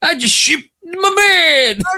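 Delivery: put-on very high-pitched old man voice. Quoting a line from a favorite commercial in a Cosby-esque old man voice. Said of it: "it almost sounds Cosby-esque".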